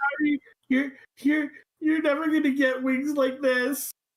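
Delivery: tearful voice. Julie flies up to Fizzlebit to say sorry, crying while apologizing. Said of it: "like cry and say she's so sorry".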